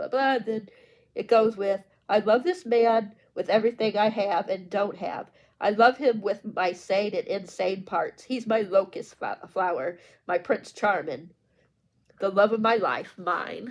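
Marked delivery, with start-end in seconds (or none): none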